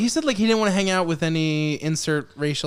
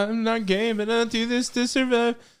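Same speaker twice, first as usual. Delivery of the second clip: fake, weepy, tearful voice, pitched up; 5 semitones higher than usual. Showing how the character should have spoken: mock tearful voice. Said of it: "do it tearfully".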